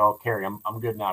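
plain

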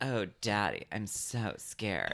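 very slow, drawn-out, sing-song, swooping up and down. Quoting Audrey's line to her angry dad: Audrey quote from Twin Peaks. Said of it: "And she goes".

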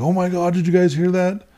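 frantic, high-pitched, panicked alarmed scream. Retelling an investigation, speaker imitates a man fleeing a door, imitating Aaron screaming.

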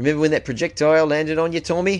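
put-on slightly off Australian accent. Imagining firefighters teasing a fellow firefighter, in an australian accent. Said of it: "Is that a pretty good Australian accent?".

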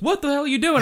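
startled, high, loud yelp.

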